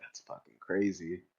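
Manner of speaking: muttered under the breath. Speaker acts out a man's reaction on reading the printed page, muttered under his breath. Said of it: "quietly under his breath".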